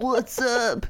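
put-on surfer dude voice. Doing voices on request for the others, in a surfer guy voice. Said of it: "that sounds more like a surfer guy".

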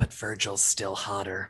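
hushed, soft, secretive whisper. Voicing a character speaking to an earring: whispering in character. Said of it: "I whisper to it".

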